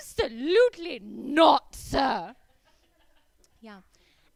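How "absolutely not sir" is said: put-on elderly British woman shrieking at full, very loud volume. Retelling screaming at a burglar as an old British woman: imitating own scream as old British woman. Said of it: "I screamed at the top of my lungs".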